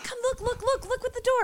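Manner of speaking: put-on excitement. Retelling a man showing off the puddle lights on a car door: imitating him all excited. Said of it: "He's all excited".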